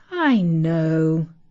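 with a sigh. A mother answers her daughter's protest, sighing. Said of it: "sighed her mother".

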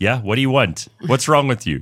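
fake blunt delivery. Retelling how the doctor just stares when asked for counseling: imitating Doctor Hanan. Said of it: "he's like".

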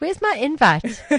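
jokey, playful teasing tone. Host to a brand manager guest who has just joined; teasing. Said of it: "I'm teasing you".

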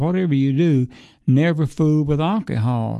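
ordinary talk

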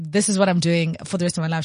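ordinary talk, nothing marked

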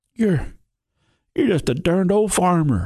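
very high, breathless, gasping words. A wounded bandit on his back speaks to the farmer Darnell: gasping. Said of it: "he gasped".

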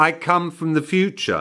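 plain, businesslike, matter-of-fact, pitched a bit high. The poor thing finally delivers her vital message at the touchline, matter-of-fact. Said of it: "her tone surprisingly matter-of-fact".

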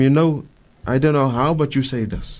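plain

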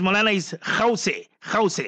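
normal talking voice

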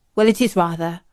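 plain

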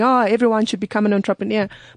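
plain

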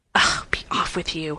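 furious, angry whisper. Reading a story, the narrator voices the boy speaking to the girl: angry whisper. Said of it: "said the boy in an angry whisper".

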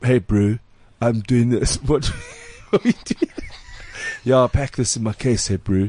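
stoner voice with bro-style talk. Speaker retells what someone said this morning, imitating a stoner voice. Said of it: "He's talking like a stoner".

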